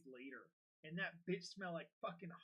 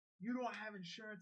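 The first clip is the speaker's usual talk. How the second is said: mock light, half-raised scolding, man's yelling voice; 4 semitones higher than usual. Telling how a man followed and lit him up, the speaker retells a man yelling. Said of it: "he was like yelling at me".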